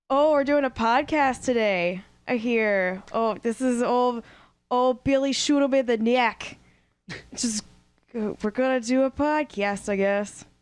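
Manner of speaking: put-on Central Pennsylvania accent. Starting a podcast, imitating Billy: Billy's Central Pennsylvania accent. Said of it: "That's my impression of of uh, Billy's. Is it Central Pennsylvania?".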